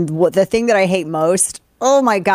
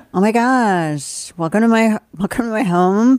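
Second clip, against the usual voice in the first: put-on girl accent with uptalk, slower; 4 semitones higher than usual. Showing the accent just asked about, girl accent, everything a question. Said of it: "It's the girl accent. Everything's a question".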